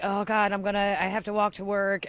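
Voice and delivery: ordinary talk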